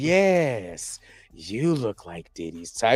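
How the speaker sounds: low, deep, drawn-out, corny villain drawl. Acting out cheesy villain lines: cheesy villain voice. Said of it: "cheesy villain lines".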